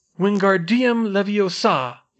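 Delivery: loud, high chanting shout. A narrator reads Ron trying the spell on his feather again, shouting the spell. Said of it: "he shouted it this time".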